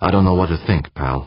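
ordinary delivery

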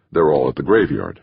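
ordinary delivery

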